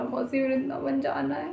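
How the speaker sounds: acted crying, pleading voice. Retelling a phone call with an aunt, imitating own tearful plea. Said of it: "मैं रोते-रोते बोला".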